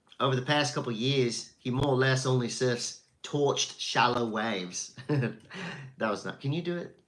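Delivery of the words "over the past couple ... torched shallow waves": put-on Australian accent, read aloud. Reading out a director's quote about an actor, in an Australian accent. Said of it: "Should I do an Australian accent?".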